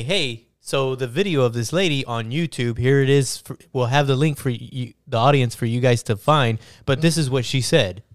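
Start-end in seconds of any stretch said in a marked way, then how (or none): none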